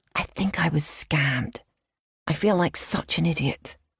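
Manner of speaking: secretive, conspiratorial, hushed whisper. Reading a story where a character confides at dinner: conspiratorial whisper. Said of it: "in a conspiratorial whisper".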